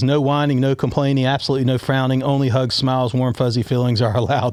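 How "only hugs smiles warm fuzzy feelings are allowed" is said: ordinary talk, nothing marked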